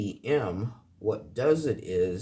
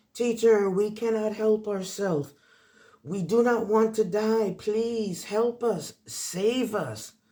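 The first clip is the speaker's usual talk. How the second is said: play-acted, very high, shrill screaming; 11 semitones higher than usual. Retelling a film scene where girls on a roof plead: imitating girls screaming. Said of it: "the girls are screaming".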